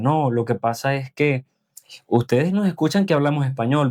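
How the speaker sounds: ordinary talk, nothing marked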